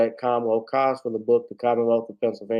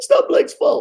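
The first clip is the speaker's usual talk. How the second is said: hoarse coach voice, higher and louder; 6 dB louder than usual. Closing a stream while losing the voice: Doc Rivers impression. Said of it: "Doc Rivers".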